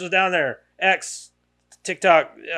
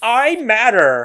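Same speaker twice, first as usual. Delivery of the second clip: put-on bratty, ridiculous girl voice, pitched up, loud; 5 semitones higher, 5 dB louder than usual. Speaker recalls how the girl from American Horror Story said it, bratty American Horror Story girl voice. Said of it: "I hear it in that voice and the tone of the girl".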